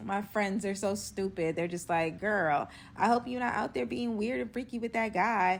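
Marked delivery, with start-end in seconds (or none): none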